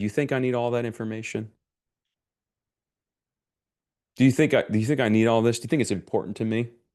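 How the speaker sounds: amused speech with chuckles in it. Retelling what he said to you, with a chuckle in his voice. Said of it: "with a chuckle in his voice".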